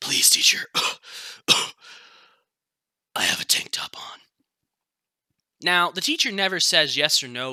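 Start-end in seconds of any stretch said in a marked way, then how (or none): 0.0-4.2 dry-throated, parched, dehydrated-sounding pleading voice. Retelling a student's reply to his teacher, imitating Lewis's parched voice. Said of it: "in a very parched, dehydrated voice".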